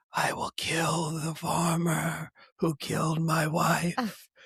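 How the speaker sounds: slow, drawn-out cartoon snake voice. Recalling a film, the speaker imitates the snake's line: the snake's voice. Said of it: "I can always remember that snake's voice".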